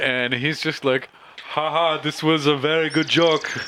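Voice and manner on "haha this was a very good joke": put-on failed, botched Austrian accent, pitched up. Speaker voicing a nervous man's reply to a joke, in a botched Austrian accent. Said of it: "I just fucked up his accent there".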